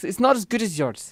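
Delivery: attempted Scottish accent. Asked by the other speaker whether he can do Scottish, attempting a Scottish accent. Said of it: "This is my Scottish accent".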